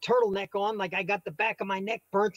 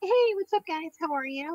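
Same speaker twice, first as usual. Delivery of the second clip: imitated mother's voice; 7 dB quieter than usual. Speaker recalling friends asking to hear the mom voice, then doing it. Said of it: "Let me hear the let me hear the mom voice".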